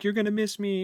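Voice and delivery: high, tearful, sobbing pleading tone. Recounting an upset character from an audiobook, imitating someone crying. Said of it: "she's like crying".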